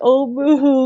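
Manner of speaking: put-on crying. Mocking a disliked wrestler who always cried: mock crying.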